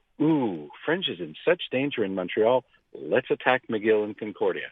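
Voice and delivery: ordinary talk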